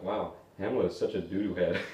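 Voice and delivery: put-on muttered aside, under the breath. Retelling a classmate's remark during a class reading of hamlet: retelling an under-breath comment. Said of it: "kind of like commented under his breath".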